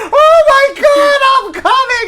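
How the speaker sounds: very high crying, sobbing wail.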